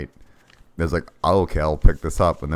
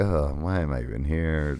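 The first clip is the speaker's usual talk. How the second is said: acted bored, listless, can't-be-bothered weary groan; 5 dB quieter than usual. Describing the game's voice acting, imitating how the Alucard actor sounds: bored Alucard voice. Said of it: "He just sounds, like, super".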